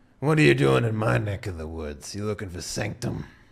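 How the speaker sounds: put-on menacing, threatening boss voice. Voicing Hammer standing up to question the players: voicing Hammer, menacing gang boss. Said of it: "stands up and he's just like".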